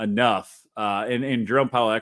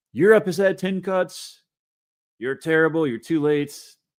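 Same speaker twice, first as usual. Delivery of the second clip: rough, poor imitation of a famous voice, pitched higher; 7 semitones higher, 3 dB louder than usual. Reading a tweet aloud that attacks Jerome Powell: bad Trump impression. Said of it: "I don't do a very good Trump impression".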